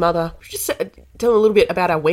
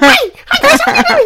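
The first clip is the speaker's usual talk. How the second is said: put-on puppet voice, higher and louder; 8 dB louder than usual. Comparing oneself to Elmo and imitating his greeting: Elmo voice. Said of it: "like Elmo".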